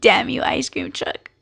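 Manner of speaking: laughing through tears. Crying whenever the ice cream truck comes, the speaker curses it, crying while laughing. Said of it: "I'm crying and laughing at the same time".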